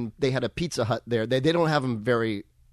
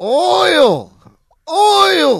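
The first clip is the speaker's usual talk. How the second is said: very shrill, loud, swooping, stretched-out "oil"; 12 dB louder than usual. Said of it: "Tin Man's lines".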